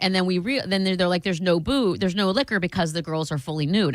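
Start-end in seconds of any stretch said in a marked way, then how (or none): none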